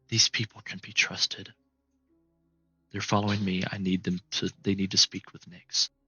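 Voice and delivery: barely audible, soft, hushed whisper. Voicing a character whom the group can barely hear: whispering. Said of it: "you can ever so slightly hear her".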